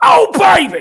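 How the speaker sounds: shrill, high, loud, booming wrestler-style cry. Trying out a wrestler's catchphrase impression for the others: imitating a wrestler's catchphrase. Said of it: "Did that sound like".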